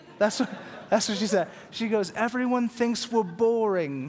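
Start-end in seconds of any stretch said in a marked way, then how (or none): 2.2-4.1 put-on South African accent, higher pitch. Relaying what a South African woman said, South African accent impression. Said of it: "That's my best South African".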